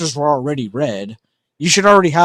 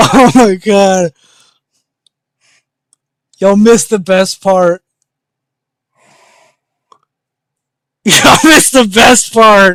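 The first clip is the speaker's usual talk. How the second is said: talking through laughter, higher pitch and louder; 6 semitones higher, 8 dB louder than usual. Watching someone fail to work a camera, laughing while talking. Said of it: "I'm actually crying right now".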